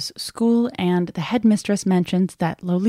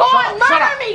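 screaming yell, higher and louder; 5 dB louder than usual. Acting an argument after being slapped, screaming. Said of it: "she screams".

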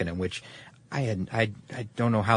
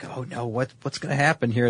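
play-acted commentator voice in sudden dismay; 3 semitones higher than usual. Retelling how the race announcers sounded at the finish: imitating announcers' dismay. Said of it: "the dismay in their voice".

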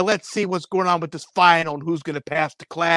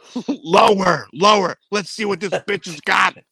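put-on yelling; 2 semitones higher than usual. Describing an old video, acting out what a man yelled: retelling a yell. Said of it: "he's yelling".

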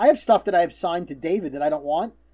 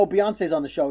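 ordinary talk

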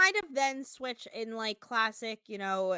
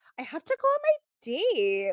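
weird put-on Valley Girl accent, high, loud, swooping, sing-song; 6 semitones higher, 5 dB louder than usual. Recounting the cast heading out on dates, mimicking New York; New York's fake Valley Girl accent. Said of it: "did this weird Valley Girl affect where she's like".

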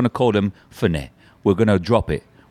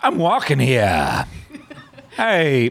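put-on celebrity voice with pitch swinging all over; 4 semitones higher than usual. Asked to do the 'I'm walking here' line, Christopher Walken impression. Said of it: "Do the I'm walking here line as Christopher Walken saying it".

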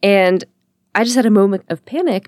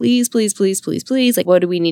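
put-on desperate, pleading tone. Retelling begging a taxi driver for a ride: retelling begging. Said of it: "And I was begging him".

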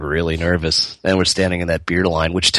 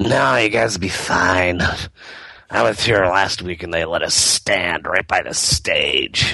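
put-on, imitated drunk woman's voice. Retelling what a random drunk lady at the show said: imitating a drunk lady. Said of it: "random, like, drunk lady".

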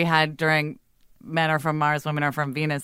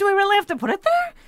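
high, fast, upward-lilting mock impression. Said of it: "trying to get the upward inflection at the end".

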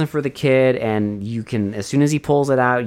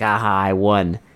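acted wicked villain cackle through the words; 4 semitones lower than usual. Describing a scene where a character crawls out of a fissure, retelling a cackle. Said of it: "like cackling".

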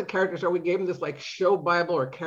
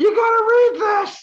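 shrill, very high, very loud scream; 9 dB louder than usual. Telling how the woman in the next office reacted, retelling a scream. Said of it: "she like screamed".

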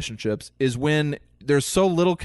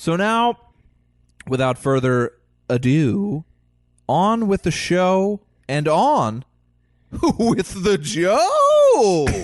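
sing-song delivery with a disbelieving chuckle; 5 semitones higher, 4 dB louder than usual. Opening the show and greeting Walsh, with a disbelieving chuckle. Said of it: "I threw in kind of a disbelieving chuckle".

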